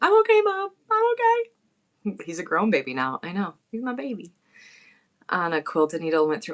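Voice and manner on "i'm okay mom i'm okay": put-on very high, long, drawn-out child's scream. Retelling her son's injury, imitating him screaming to her, retelling a child's screaming. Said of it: "he just kept screaming that he was okay".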